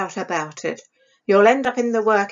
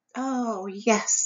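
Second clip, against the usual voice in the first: sighing, quieter voice; 8 dB quieter than usual. Narrator reading, Isobel answers a warning about Mama: sighed. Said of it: "sighed Isobel".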